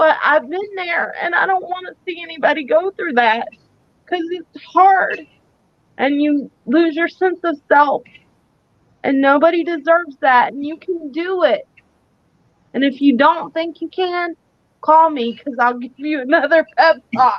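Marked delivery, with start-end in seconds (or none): 1.2-5.3 emotional voice near tears, tearful. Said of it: "I'm sorry I'm getting emotional".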